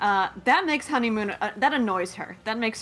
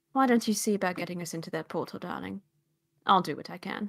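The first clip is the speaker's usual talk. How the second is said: polite character voice, played politely; 2 semitones lower, 5 dB quieter than usual. Voicing Honeymoon thanking a polite character: voicing Honeymoon. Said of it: "and she says".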